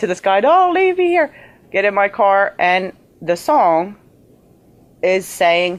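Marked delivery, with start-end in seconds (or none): 0.4-1.3 mock very high crying scream. Retelling screaming at the sky on a country road: retelling a scream to the sky. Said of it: "screaming in the middle of the sky".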